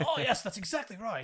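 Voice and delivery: fake, overdone, bad British accent, very high. Saying an american struggles to do a british accent, then trying one: bad british accent. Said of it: "do a British accent for a British person".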